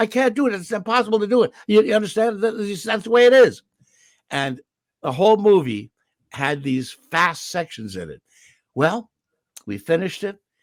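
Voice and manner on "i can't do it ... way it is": high-pitched, loud mock French accent. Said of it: "So we had to say".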